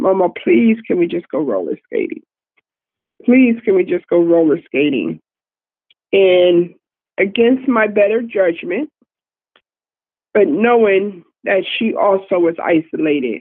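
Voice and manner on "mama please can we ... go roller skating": fast, swooping, pleading tone. Retelling how the girl begged to go roller skating, imitating someone begging. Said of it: "she begged".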